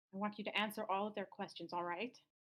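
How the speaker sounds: motherly, mom-like voice. A game master voices Anya addressing Kristoff, Anya's mom voice. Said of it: "the mom voice".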